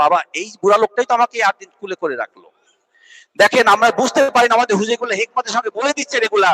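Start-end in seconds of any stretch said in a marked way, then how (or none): none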